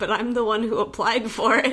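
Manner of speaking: usual speaking voice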